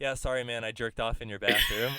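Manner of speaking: offhand, casual delivery. Retelling own reply after a long bathroom break: imitating own nonchalant tone. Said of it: "And all s-, nonchalant".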